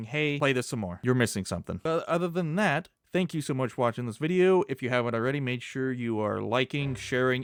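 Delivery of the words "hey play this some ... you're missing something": plain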